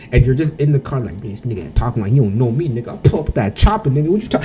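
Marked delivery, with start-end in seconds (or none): 1.2-4.5 put-on angry ranting with swearing. Speaker acts out what he said in the car while getting mad; retelling his own angry rant. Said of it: "I was like swearing all the way home".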